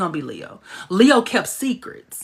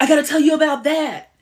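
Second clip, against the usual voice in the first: pitched-up, higher, youthful-sounding voice; 6 semitones higher than usual. Retelling what Leo says to the elders: young Shay Van Buren voice. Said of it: "made him sound like a young Shay Van Buren".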